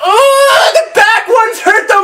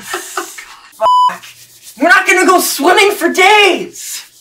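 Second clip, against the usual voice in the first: pained, hurting cry; 2 semitones lower than usual. Right after something hurts, showing it off to the others: pain voice. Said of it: "This is my pain voice!".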